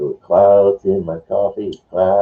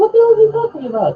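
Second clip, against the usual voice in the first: very high, silly put-on voice, rattled off quickly. Acting out a confused viewer reacting to the show, high put-on voice. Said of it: "he's saying in that high voice".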